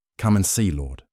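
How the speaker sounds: plain reading voice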